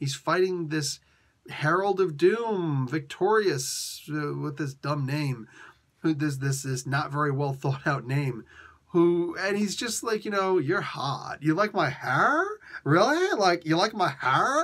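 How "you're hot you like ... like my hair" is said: put-on swooping Valley Girl accent. Quoting a comic's dialogue in Johnny Storm's voice: Johnny Storm in a Valley Girl accent. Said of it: "read Johnny Storm's voice in a Valley Girl accent".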